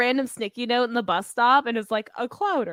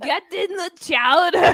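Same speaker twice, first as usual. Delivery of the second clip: put-on deep man voice, higher and louder; 6 semitones higher, 5 dB louder than usual. Trying the same cartoon quote: Arnold Schwarzenegger voice. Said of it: "I don't have a deep man voice".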